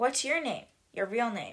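ordinary delivery

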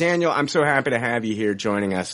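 insincere, going-through-the-motions tone with no sincerity. Welcoming a guest to the episode: insincere tone. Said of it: "the sincerity in my voice isn't there".

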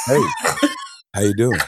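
cool, laid-back, swooping cool-guy voice. Describing first meeting Carl, who seemed like a blaxploitation film character, imitating Carl's cool greeting. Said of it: "reminded me of a cool character out of those American".

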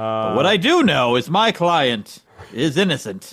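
very slow, drawn-out delivery. Continuing the quoted sketch line: Unfrozen Caveman Lawyer voice. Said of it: "Unfrozen Caveman Lawyer".

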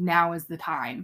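ordinary delivery

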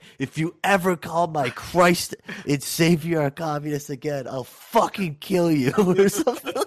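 acted angry outburst. Reminding the listener of their screaming argument, retelling an angry outburst. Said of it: "you stood up and you're like".

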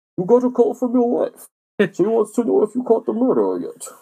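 very high villain voice with swinging pitch. Retelling how others relayed the phone messages, Bane voice. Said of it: "like the Bane voice".

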